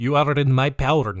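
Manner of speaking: fake Russian accent, nearly convincing but off. Retelling what a man said while holding a boy upside down, in a bad Russian accent. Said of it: "That's almost Russian".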